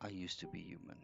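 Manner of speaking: barely audible, very soft, confiding half-whisper. Voicing a character confessing to another: very soft half-whisper. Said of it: "in a very soft whisper".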